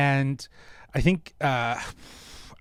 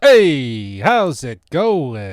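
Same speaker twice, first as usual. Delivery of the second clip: very loud put-on fifties New York accent, drawn-out "hey"; 9 dB louder than usual. A guest introduced on the show greets the host with an Italian-feeling accent. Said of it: "came in with like a bit of an Italian feeling accent".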